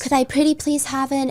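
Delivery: mock-polite pleading. Mocking what people seem to want women to do, acting out a mock-polite plea. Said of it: "politely ask".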